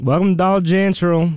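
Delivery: put-on Southern accent. Speaker showing how Southerners say a word, in a Southern accent. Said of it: "you know how they say general?".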